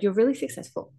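ordinary talk

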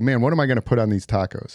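ordinary delivery

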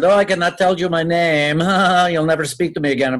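bad put-on Puerto Rican accent. Retelling refusing to give a name when asked who is calling: bad Puerto Rican accent. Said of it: "I used like a bad Puerto Rican accent".

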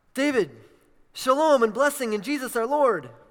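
quick, bright, excited voice, high and loud. Reading out a friend's text message, imitating Henry's voice. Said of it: "I'm trying to talk like Henry now".

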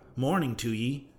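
ordinary delivery

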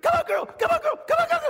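shrill, high, loud screaming cheer. Retelling a dad on the sideline cheering his daughter: imitating a dad screaming. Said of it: "he's screaming".

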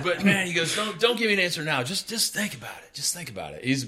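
put-on Tennessee accent. Retelling what Steve told him after he said no, in Steve's Tennessee accent. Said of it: "So I'll throw a Tennessee accent".

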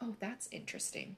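mock-interested, patronizing, hushed whisper. Imitating people reacting to talk of Latin plant terms, mock-condescending tone. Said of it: "make a condescending tone and be like".

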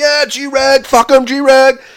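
play-acted very high, very slow, drawn-out taunting cheer. Retelling cheering on a player with a buddy, retelling screaming. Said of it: "We're screaming".

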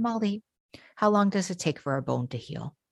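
very calm, soft, serene, gently soothing tone. Retelling what a Buddhist man said to Molly, imitating a very calm voice. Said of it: "he only spoke in this very calm voice".

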